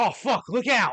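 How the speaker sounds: put-on Australian accent, pitched very high. Speaker jokes about how an australian guy would react, in an australian accent. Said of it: "an Australian guy".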